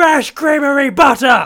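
very high, very loud, shrill enraged yell. In a group drill, a performer says the practice phrase angry, as the leader asks. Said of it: "but can I get it angry?".

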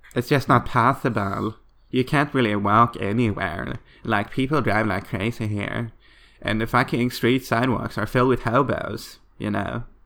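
put-on camp Los Angeles accent.

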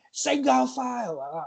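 acted-out scream. With headphones in, recalling shouting at three people one at a time, retelling a scream. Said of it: "So I'm just screaming".

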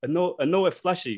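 put-on accent of the Dominican Republic. Retelling his own words to a woman, Dominican accent. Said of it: "I was speaking with like a Dominican accent".

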